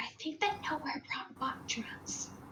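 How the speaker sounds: whispered voice. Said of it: "whisper to him and be like".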